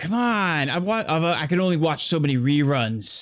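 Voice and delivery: angry man's voice. Game narrator voices a second man overheard through the hallway; angry male voice. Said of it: "a sort of a angry another male voice".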